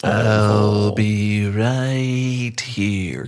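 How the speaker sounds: put-on alien voice. Doing a quick impression: E.T. impression. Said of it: "the E T impression".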